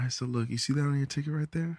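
quiet, hushed, low-key voice. Retelling airport staff stopping him, the speaker is retelling a low voice. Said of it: "they always approach you with a low voice".

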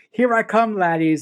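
ordinary talk

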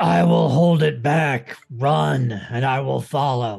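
growled character voice. In a game round, a player speaks as Bacho: Bacho growling. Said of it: "Bacho growls out".

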